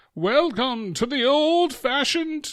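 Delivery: high, slow, stretched-out medieval announcer voice.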